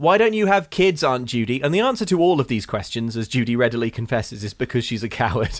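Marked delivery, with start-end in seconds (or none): 0.0-1.6 put-on brash, blunt teenage voice, pitched up. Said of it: "kind of brashness".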